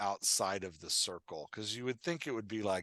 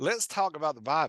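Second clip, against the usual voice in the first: loud preaching delivery in Southern accent; 7 semitones higher, 8 dB louder than usual. Playing an old pastor joking about the Bible: old Pastor Jeff voice. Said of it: "that's my true accent. I wasn't mocking Southern people".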